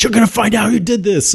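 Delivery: mock, very high, shrill, furious screaming. Retelling how a character fights others, imitating someone screaming.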